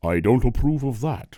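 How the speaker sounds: very loud, booming, judging voice as if from above. Speaking as a judgmental God over us, God voice mixing James Earl Jones and Sean Connery. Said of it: "a mix between James Earl Jones and Sean Connery".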